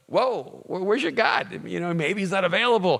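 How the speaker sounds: high, play-acted, sarcastic, mocking jeering voice. Retelling how Elijah taunts the prophets: imitating Elijah mocking. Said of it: "he's just mocking them".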